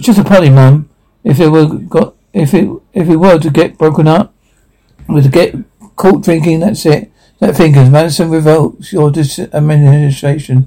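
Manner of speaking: usual speaking voice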